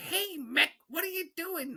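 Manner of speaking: tiny, squeaky and silly voice. Speaker retells voicing a club they named Little Buddy: Little Buddy's stupid little voice. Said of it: "Like this stupid little voice".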